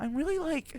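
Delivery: very high, silly put-on falsetto voice. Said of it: "That's my favorite voice to go into".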